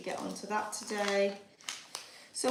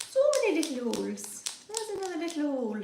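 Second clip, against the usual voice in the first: put-on high-pitched Irish accent with a lilt. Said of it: "Why have I become Irish?".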